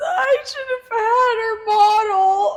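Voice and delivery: play-acted, very high, drawn-out tearful sobbing. Retelling a Dance Moms scene of a dog's death: imitating Abby crying.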